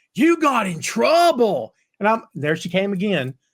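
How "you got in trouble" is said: high-pitched, slow, loud yelling. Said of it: "yells at her".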